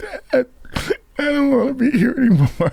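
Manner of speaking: put-on loud, very high, weepy cry-talk. Retelling a call home on Christmas morning: imitating his own crying. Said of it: "and I start crying".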